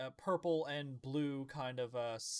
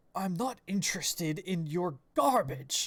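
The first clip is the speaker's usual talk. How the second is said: loud, stern father character voice; 4 semitones higher, 8 dB louder than usual. Voicing a scorned father at the bar, refusing an offering: stern character voice. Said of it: "he's more, like, stern".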